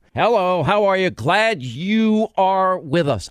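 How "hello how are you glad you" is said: lively, animated, drawn-out radio host voice. Retelling how the first on-air greeting came out: imitating own animated radio yell. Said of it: "you have to be more animated".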